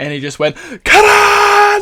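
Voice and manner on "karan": very loud, very high, drawn-out shout. Retelling how a restaurant worker shouted a name: imitating someone shouting a name. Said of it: "At the top of his lungs".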